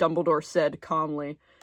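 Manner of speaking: normal talking voice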